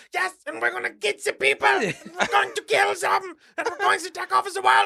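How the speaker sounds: put-on high-pitched, over-the-top German accent. Describing how ridiculous a movie portrayal is, act out the movie Adolf Hitler with a German accent. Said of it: "he's got this German accent".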